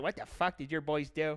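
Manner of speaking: irate, angry, swearing, cursing outburst. Retelling how the neighbor reacted to the paintballed car: imitating the neighbor's outburst. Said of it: "That's how he said it".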